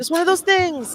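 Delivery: high, loud delivery.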